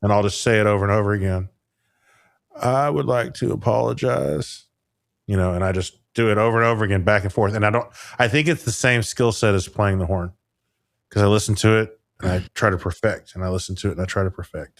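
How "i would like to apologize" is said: slow, drawn-out, rough, creaky, rasping politician's voice. Showing how a clip is practised in the car: Bill Clinton impression. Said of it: "On his Clinton".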